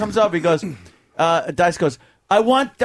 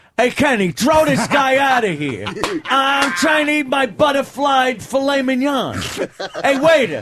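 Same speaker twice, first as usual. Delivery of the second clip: big dramatic delivery, raised and unhurried; 5 semitones higher than usual. Doing a dramatic reenactment of a Dice conversation with Kenny: imitating Dice. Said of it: "a dramatic reenactment of a Dice conversation with Kenny".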